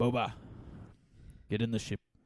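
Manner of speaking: put-on raspy voice with mixed Australian accent. Describing a New Zealand actor's accent, the speaker does a raspy Australian-Islander accent. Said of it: "Australian kind of mix with like an Islander type of accent".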